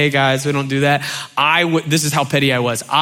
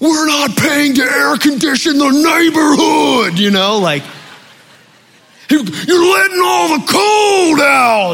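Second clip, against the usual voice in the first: very high, hard, scolding yell; 11 semitones higher, 4 dB louder than usual. Recalling your dad yelling to close the door, imitate him yelling like Macho Man Randy Savage. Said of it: "My mom or my dad would be yelling".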